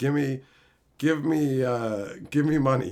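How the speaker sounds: pushy, stumbling, half-hearted demanding yell. Retelling how the stranger yelled at the stream: imitating someone yelling. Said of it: "just yelling".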